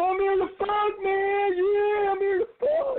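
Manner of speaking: play-acted shrill, repeated, drawn-out yelling, very high pitch. Telling a comedy story about an audience member who kept shouting the same thing over and over, retelling a yell. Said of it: "this one kid started yelling".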